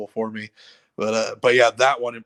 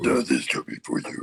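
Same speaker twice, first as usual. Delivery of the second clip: scratchy monster voice, much lower pitch; 9 semitones lower than usual. Explaining the voice used for a monster, the speaker demonstrates: low scratchy monster voice. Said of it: "the low scratchy voice".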